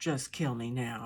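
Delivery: growling. Narrator reads a man's reply as he is pulled to his feet, growled. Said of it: "he growled".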